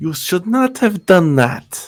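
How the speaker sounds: oddly squeaky, unusually high voice. Narrating a fight, voice the big foe who took your uppercut: unusually high voice. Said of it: "He's got an unusually high voice".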